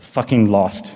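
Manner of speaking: put-on man's British accent. Retelling what a man said on seeing Lineage, in a British accent. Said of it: "the great British accent".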